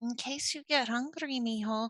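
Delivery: faint, odd, strange little half-whisper. Voicing an unseen figure speaking to a player: strange little half-whisper. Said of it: "There's just this little strange whisper".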